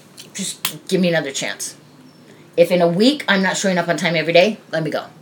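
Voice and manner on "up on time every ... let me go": ordinary talk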